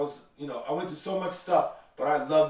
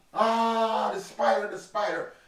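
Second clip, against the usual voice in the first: high, drawn-out scream with a long "ah"; 7 semitones higher than usual. Speaker retelling what the other canoe paddler screamed, imitating someone screaming. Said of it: "he's screaming at me".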